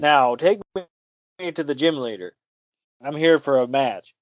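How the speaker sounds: mock earnest, dead-serious tone. Retelling a cartoon scene where Ash gets serious: imitating Ash getting serious. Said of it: "Ash gets serious".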